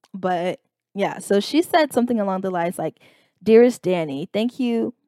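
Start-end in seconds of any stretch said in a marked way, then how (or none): 3.5-5.0 mock sarcastic tone. Retelling a parent's reply message: imitating a sarcastic message. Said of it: "she was being sarcastic".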